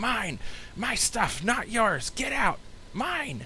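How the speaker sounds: very high, drawn-out, disembodied ghostly screaming voice. Describing a scene where items start flinging toward you, disembodied voice screaming. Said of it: "this kind of disembodied voice screaming".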